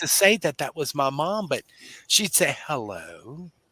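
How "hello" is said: proper, polished, prim, low, soft voice. Recalling their mom answering the phone on Saturday mornings, imitating mom's proper phone voice. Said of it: "she'd talk so proper".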